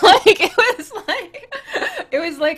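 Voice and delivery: high, loud burst of laughter.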